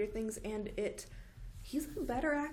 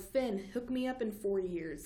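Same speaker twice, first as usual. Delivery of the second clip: plain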